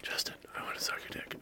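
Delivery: barely voiced, very soft, breathy whisper. Retelling what was heard at a drinking night: imitating a whisper. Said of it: "I hear this fucking whisper".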